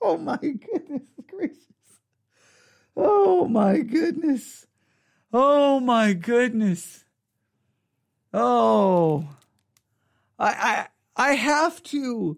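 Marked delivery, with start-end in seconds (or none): 0.0-7.0 exclamations broken up by laughter. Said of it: "I gotta laugh here".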